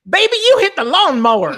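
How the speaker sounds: put-on loud, angry Southern accent, pitched way up high. Retelling his wife's reaction after he hit the lawnmower, imitating her Southern accent. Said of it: "that South comes out".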